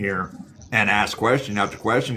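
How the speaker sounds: normal talking voice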